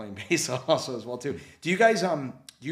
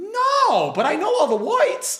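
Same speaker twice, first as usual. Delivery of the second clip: very high, very loud, goofy squeal, "no" stretched; 9 dB louder than usual. Retelling a Three Stooges court scene, answering as Curly: Curly voice. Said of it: "Curly, why don't you answer the prosecutor?".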